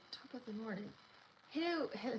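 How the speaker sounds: clumsy fake Scottish accent. Thanking people on a forty-fourth birthday, speaker tries a bad scottish accent. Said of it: "let me see if I can do a Scottish accent".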